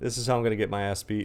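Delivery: ordinary delivery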